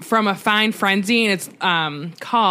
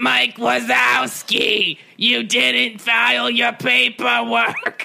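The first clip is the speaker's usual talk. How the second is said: very slow, creaky, rough, drawn-out drawl; 3 semitones higher than usual. Joking about Monsters, Inc., doing a good Roz impression. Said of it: "That was a good Roz".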